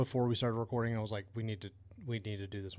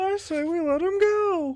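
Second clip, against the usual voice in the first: scared, very high, loud, slow squeal; 13 dB louder than usual. Imitating Pee-wee hoping not to get killed in the bar: scared Pee-wee Herman voice. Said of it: "not wanting to get killed in the bar".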